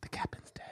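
breathy, hushed whisper. Retelling a movie scene where a character whispers: imitating a whisper. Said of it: "where she whispers".

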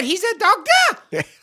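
loud yell. Retelling how someone yells out a question: imitating someone yelling. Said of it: "someone yells out".

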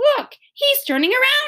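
shrill, very high-pitched shouted call. Someone watching the dog calls out to the others, shouted. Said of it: "shouted Mary Jane".

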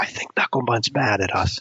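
leaning-in whispered aside. In a game scene, leaning over to a companion, whispering. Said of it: "lean over to Targray and whisper".

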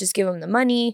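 put-on crying voice, tearful and pleading. Recounting a scam call, quoting the faked voice of the listener, imitating someone crying. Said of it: "you were crying".

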